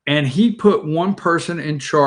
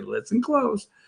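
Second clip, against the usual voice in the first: slow, soft, drawn-out speech, each word spaced; 7 semitones higher, 7 dB quieter than usual. Imitating people who dumb things down for him, talking real slow. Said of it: "like talking real slow and say".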